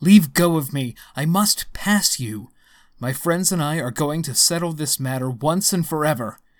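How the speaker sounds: stern outcry. A man answers Effie as he pushes her aside; cried sternly. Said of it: "he cried sternly".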